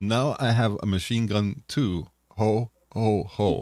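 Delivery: deliberate, very slow, drawn-out character voice. Retelling a movie scene, the speaker does a Hans Gruber voice. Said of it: "I'm going to try to do my best Hans Gruber here".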